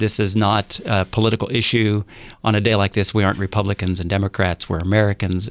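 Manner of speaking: ordinary talk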